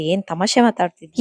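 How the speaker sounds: ordinary talk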